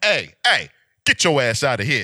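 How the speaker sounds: stern dad voice. Showing how to react when a kid walks in: stern dad voice. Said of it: "So basically get stern on him".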